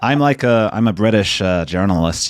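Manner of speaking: bad, terrible put-on American accent. British journalist, asked about their background, jokes: bad American accent. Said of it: "That's my American accent".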